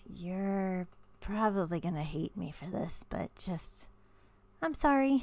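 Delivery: tender, gently apologetic tone. A character nuzzles another before walking forward, tender and apologetic. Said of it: "she nuzzles at Denethor and goes".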